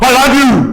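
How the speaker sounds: angry, high-pitched, shouted yell. Speaker shows saying it to his wife in the wrong tone: angry yelling. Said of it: "Why are you yelling at me?".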